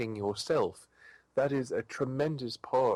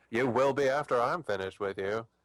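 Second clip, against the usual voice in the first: full camp, sassy queen delivery. Reading a villain's line from a story aloud: sassy queen voice. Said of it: "in a sassy queen voice".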